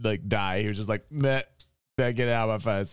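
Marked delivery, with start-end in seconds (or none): 1.1-2.9 high, offhand, careless nonchalance, acted out. Retelling how a player threw the dice, imitating a nonchalant player. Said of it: "he just nonchalantly threw that".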